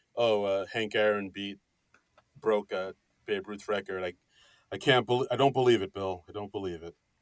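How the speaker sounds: put-on subdued delivery. Act out how he told of the home run record, imitating a very muted delivery. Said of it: "he said it in a very muted way".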